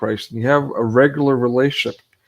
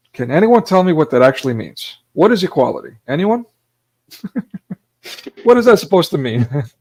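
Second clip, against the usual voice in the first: talking through bursts of laughter, pitched up; 5 semitones higher than usual. Speaker puts questions to the listeners, laughing while talking. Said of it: "I'm sorry, I'm laughing".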